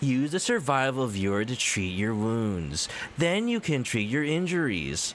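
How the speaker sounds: mock-condescending, patronizing, babying voice. Quoting her line about the survival viewer, mock-condescending, babying voice. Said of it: "she sounds so condescending in that one".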